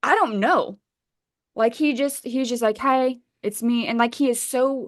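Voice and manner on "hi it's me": flat, blank, emotionless deadpan delivery. Retelling a man's proof of life video: imitating an emotionless delivery. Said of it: "there's no ex-, emotion to this fa-, to the face".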